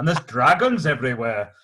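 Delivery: loud, amateur attempted Welsh accent. Talking about Wales and the Ivor the Engine show: attempted Welsh accent. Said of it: "That's me attempting a Welsh one".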